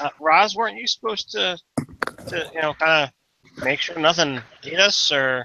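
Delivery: halting, stuttering all the way through. Player voicing a character questioning a party member, stuttering the whole time. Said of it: "he stutters the entire time he says it".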